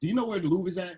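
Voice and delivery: ordinary talk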